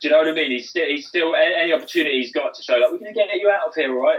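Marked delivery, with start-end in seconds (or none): 2.9-4.2 high, put-on condescending, patronising, reassuring tone. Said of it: "he comes across as so patronising".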